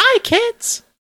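squeaky, very high voice. Voicing a mouthless marshmallow-cereal Martian creature: high squeaky voice. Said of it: "This thing has a squeaky voice".

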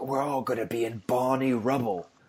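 terrible put-on Cockney accent. Retelling a movie scene in Don Cheadle's bad Cockney accent. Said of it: "the worst Cockney accent of anyone alive".

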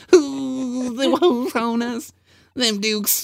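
squeaky, very high, very slow Southern twang, "the" stretched. Teasing the other speaker by repeating their line back: Boss Hogg Southern voice. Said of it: "You turned into Boss Hogg from the Dukes of Hazzard".

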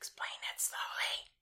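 very soft, hushed, breathy whisper. Introducing an episode of the show; whispering. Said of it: "Why are you whispering?".

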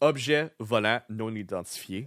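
Quebecois French accent. Reading a French phrase aloud: Quebecois French accent. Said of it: "the Quebecois accent".

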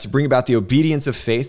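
ordinary talk, nothing marked

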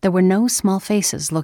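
plain

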